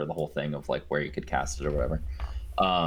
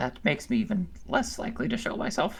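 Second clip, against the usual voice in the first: piercing, shrill, very high-pitched little voice. A hidden character refuses to show itself to three others: shrill, high-pitched voice. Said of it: "you just hear this kind of shrill, high pitched".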